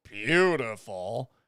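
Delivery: slow, drawn-out sarcastic praise.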